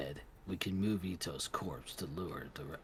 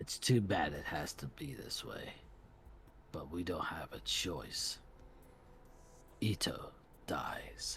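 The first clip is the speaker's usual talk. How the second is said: cold, steely, decisive voice. The squad's vice-commander looks up and speaks to his commander: voice like cold steel. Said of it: "his voice was like cold steel, the voice of the demon. / Then he looked up, and when he spoke, his voice was like cold steel, the voice of the demon. / First, we'll invite [name] to [name]-san's secon".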